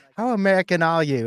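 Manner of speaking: put-on British accent. Speaker imagines a voice reacting as a picture comes up, british voice. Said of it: "I just hear a British voice being like".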